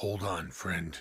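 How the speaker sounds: soft, reassuring, pure half-whisper with no voice. A player's character speaks to an unconscious party member, half-whispering. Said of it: "I'm going to whisper to her unconscious body".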